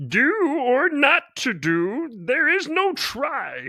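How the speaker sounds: very high, drawn-out, cryptic-sounding voice. Giving advice about industry speak, the speaker quotes Yoda: bad Yoda impression. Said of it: "that was a bad impression".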